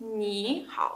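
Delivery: ni lifted into rising second tone. Mandarin lesson on two third tones in ni hao: rising tone on ni. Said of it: "первый превращается во второй. Произносится он как второй".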